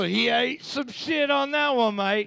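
thick, overdone put-on Australian accent, high. Commenting on a trivia answer, put-on Australian accent. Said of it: "too much Australian".

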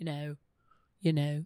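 put-on low, soft Liverpool lilt. Mocking how a woman says her filler words, imitating her accent. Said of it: "but it's in the accent".

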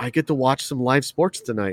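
usual speaking voice

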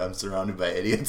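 ordinary talk

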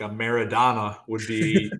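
Buffalo, New York accent. Saying the name of a soccer move: Buffalo accent. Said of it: "I'll say it with, like, a Buffalo accent".

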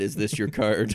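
normal talking voice

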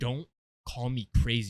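dead-serious, low-pitched and loud. Retelling a movie scene: serious Heath Ledger Joker impression. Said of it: "got so serious and was like".

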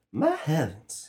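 put-on airy, high Southern belle accent. Recalling an audition piece, a speaker tries a line in a Southern belle voice. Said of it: "That's pretty much Southern Belle".

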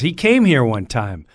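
normal talking voice

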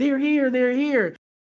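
mock high-pitched screaming of the words. Retelling how a woman suddenly started screaming: retelling a woman's screaming. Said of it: "But she was screaming".

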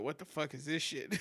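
ordinary talk

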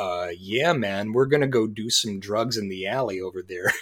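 put-on clear, clean, pleasant Michigan accent. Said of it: "nice boy Michigan accent of [name] going".

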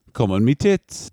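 attempted Australian accent. Speaker tries their best Australian accent, quoting a line said to someone. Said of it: "the best Australian accent I can do is".

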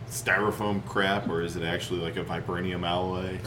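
ordinary delivery

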